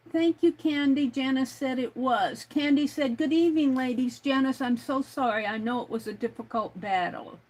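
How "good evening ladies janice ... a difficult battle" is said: plain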